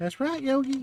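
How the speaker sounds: poorly done, high-pitched little bear voice, not quite right. After doing Yogi's line, answering him in the other bear's voice: bad Boo-Boo impression. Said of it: "I can't do a good boo-boo".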